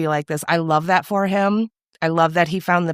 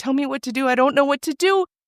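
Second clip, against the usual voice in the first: play-acted sobbing, high, tearful and overwhelmed; 8 semitones higher than usual. Retelling a TV scene where a character breaks down: imitating Pete crying. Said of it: "he's just crying. He's like".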